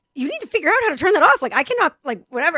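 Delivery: huffy annoyed outburst. Recounting demanding that someone in the car turn off a robot voice: retelling a huffy outburst. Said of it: "I really was like in a huff".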